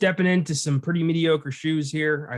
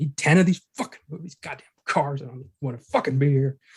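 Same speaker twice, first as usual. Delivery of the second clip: grumbled running mutter to oneself; 2 semitones lower than usual. Acting out an actor muttering to himself on set: imitating someone muttering. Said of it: "He starts muttering to himself".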